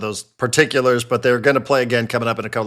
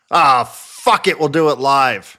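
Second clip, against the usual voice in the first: enraged screaming outburst; 2 semitones higher than usual. Acting out a show host's outtake, very angry with his production staff, imitating Bill O'Reilly screaming angrily. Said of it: "literally screaming".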